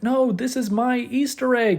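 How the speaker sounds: horrible, high-pitched, badly done robot voice.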